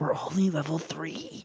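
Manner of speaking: very quiet, hushed whisper. Whispering a remark into a fellow character's ear: whispering in character. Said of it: "I whisper in Pyre's ear".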